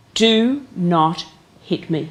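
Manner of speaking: deliberate, very slow and clear delivery. Retelling what the ladies say to their husbands: imitating a very clear voice. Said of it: "They actually say in a very clear voice".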